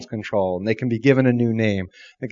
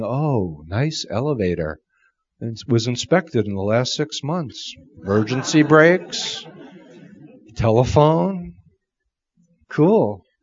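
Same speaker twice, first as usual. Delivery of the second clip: very calm, gentle, soothing, reassuring voice. Voicing what a person should hear themselves say in an elevator: calm, soothing voice. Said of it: "In a very calm, soothing voice".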